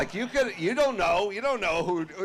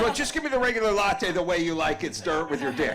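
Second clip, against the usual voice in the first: ordinary delivery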